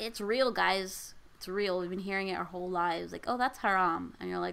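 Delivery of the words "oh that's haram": plain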